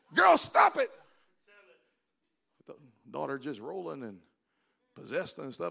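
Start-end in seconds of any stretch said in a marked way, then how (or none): 0.2-0.9 high, loud, shrill raised-voice scolding. Preaching, acting out a mother scolding her daughter: raised voice scolding. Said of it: "how we get loud when we try".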